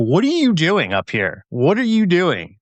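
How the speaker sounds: put-on, high, swooping, screaming cat screech. Retelling a fall, voicing a cat at the door: imitating a cat screaming. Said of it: "Bet you he's screaming".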